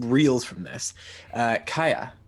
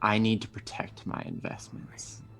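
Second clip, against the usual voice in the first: soft, quiet whisper, close in the ear; 6 dB quieter than usual. The narrator voices a voice whispering to a player: Tenebris whispering voice. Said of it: "you hear a voice whisper to you".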